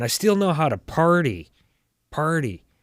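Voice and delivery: very strong Canadian lilt, party said repeatedly. Show how he says that line, with a very Canadian accent impression. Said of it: "it just sounds so Canadian".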